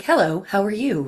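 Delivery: robotic computer-like voice. Recalling recording a season two episode, the speaker voices a computer: computer voice. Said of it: "as a computer".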